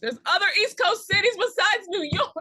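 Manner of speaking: high, loud yelling. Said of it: "I'll stop yelling".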